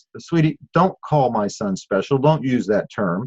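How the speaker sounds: ordinary talk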